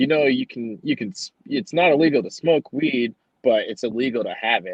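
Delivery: put-on, condescending, belittling, talking-down tone with swooping pitch. Retelling a cop talking down: imitating a cop belittling. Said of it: "just belittling me so much".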